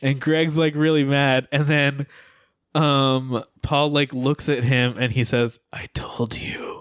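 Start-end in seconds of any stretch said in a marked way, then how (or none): 5.7-6.8 whispered, very quiet, barely audible. Retelling a movie character's reply as he looks at another: imitating a very quiet line. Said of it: "Like, very quietly".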